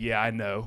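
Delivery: dismissive, offhand, brushing-off tone. Retelling the school resource officer's reply: imitating a dismissive tone. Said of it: "his tone of voice was like".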